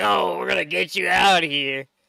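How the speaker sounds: mock rough, creaky screaming holler. Retelling how the character shouted near the guards: imitating Joker screaming. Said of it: "he's screaming and shouting and being like".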